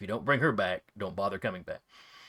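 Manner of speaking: low, threatening half-whisper. Voicing a mother hugging the adventurer goodbye: half-whispered threat. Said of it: "then whispers in your ear".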